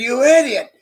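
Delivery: pretend angry yelling. Acting out an angry map directions lady in a comedy skit: mock yelling at the driver. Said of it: "starts yelling at the driver".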